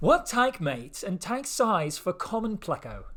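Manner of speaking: put-on, fake British accent. Reading out someone's question: put-on British accent. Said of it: "read theirs in a British accent".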